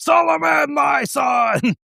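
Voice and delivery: put-on, very high, raspy, rough, booming belted call. Imagining a stone statue in a hotel lobby calling out: belting it out. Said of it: "it just belts out".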